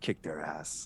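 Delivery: hushed, whispered mutter under the breath. Speaker retells someone's words as a batter steps out; retelling a mutter under breath. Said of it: "like under his breath".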